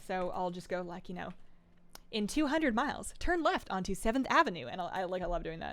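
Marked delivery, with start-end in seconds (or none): 2.1-4.7 crisp, pleasant, overly clean navigation-system announcer voice. Showing how directions get read to a driving partner: pleasant, overly clean, crisp navigation voice. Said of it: "like a pleasant and overly clean and crisp voice from a navigational system".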